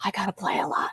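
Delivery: very quiet, hushed, soft and breathy whisper. Quoting a player's first words leaving the locker room after the game, retelling a whisper. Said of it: "she was like whispering it".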